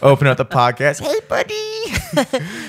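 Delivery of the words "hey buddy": very high, swooping, sing-song voice. Pretending to greet a dog on the podcast: mock dog-talk voice. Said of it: "afraid of what I might sound like".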